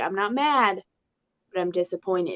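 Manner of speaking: motherly parent tone, warm mom voice. Speaker imagining addressing new mexico, in her best mom voice. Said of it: "in my best mom voice be like".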